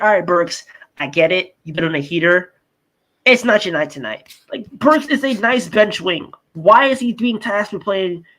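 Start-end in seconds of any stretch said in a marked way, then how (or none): none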